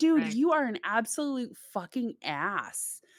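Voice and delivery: acted angry outburst. Retelling own reaction to a book character: imitating own angry rant. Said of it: "I was so pissed".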